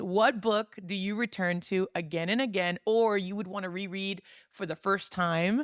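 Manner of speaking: ordinary talk, nothing marked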